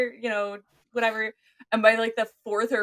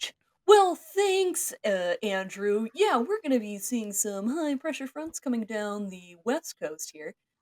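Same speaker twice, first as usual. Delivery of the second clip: goofy, silly weather-report tv news anchor voice. Speaker starts a bit after joking about news anchor names: stupid news anchor voice. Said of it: "I'm going to stop doing stupid news anchor voice now".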